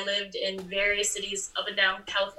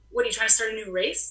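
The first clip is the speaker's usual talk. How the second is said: ordinary delivery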